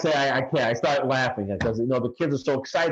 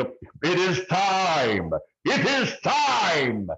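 put-on scream, much higher, slower; 5 semitones higher than usual. Telling how the film opens with them standing there; retelling a scream. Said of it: "I start screaming".

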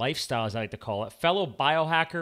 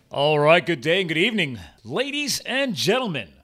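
loud, big sports-broadcast announcer voice; 2 semitones higher, 6 dB louder than usual. Show host opening the episode and greeting the audience, in a sportscaster voice. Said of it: "That's my uh, sportscaster voice".

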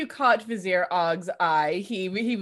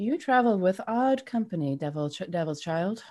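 very quiet, hushed wispy voice. Voicing what the player hears after relaxing their shield, very quiet, wispy voice. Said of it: "you hear a very quiet, wispy sort of voice".

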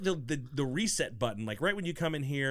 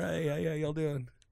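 put-on raspy voice. On a show, a host echoes a hoarse guest's greeting in a Bill Clinton impression. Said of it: "You got like a little Bill Clinton there".

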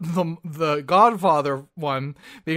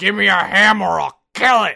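loud, creaky, dim-witted dullard line reading; 2 semitones higher, 5 dB louder than usual. Retelling a scene from a movie, imitating a stupid delivery. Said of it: "he says it like that".

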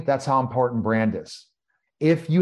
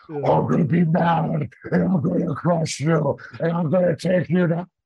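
mock tough-guy voice, fake macho bravado; 3 semitones higher than usual. A wrestler says acting tough isn't their gimmick, then demonstrates: mock tough-guy voice. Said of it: "I probably can do a great impersonation of that now".

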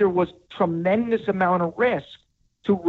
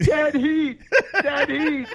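put-on, very high-pitched screaming; 9 semitones higher than usual. Answering what he would do as two horses battle: pretend screaming. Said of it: "I'm screaming".

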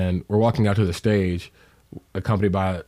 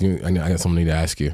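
low, flat, very low, almost deadpan voice; 2 semitones lower than usual. Imitating how she asked a question: very low, almost deadpan. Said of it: "it's very low, almost deadpan. And the way she asked me was like".

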